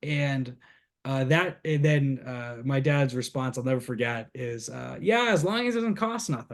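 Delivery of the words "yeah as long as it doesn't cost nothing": put-on thick, heavy Boston accent, very high and fast. A man quotes his dad's reply to the baptism question, in a thick boston accent. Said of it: "he's a thick Boston accent now".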